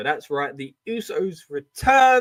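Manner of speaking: voice breaking and cracking partway through. The speaker reports a surprise wrestling return, voice cracking. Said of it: "A little bit of a voice crack".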